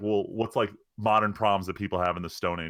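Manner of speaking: ordinary talk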